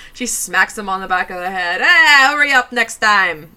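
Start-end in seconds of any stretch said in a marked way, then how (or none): 1.8-3.3 loud, put-on New York mob-boss accent. Acting out a woman bossing a man to fetch her slippers: New York mob-boss accent. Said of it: "that's a New Yorker".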